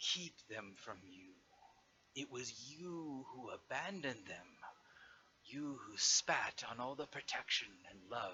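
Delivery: voice of a dragon. A narrator voices a dragon speaking through an illusion over a portal key: dragon voice. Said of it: "the dragon's voice comes back".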